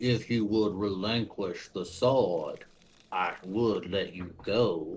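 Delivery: low, muffled mumble through a full mouth. Game master voices a foe with its mouth full of the player, mumbling. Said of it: "he does kind of mumble".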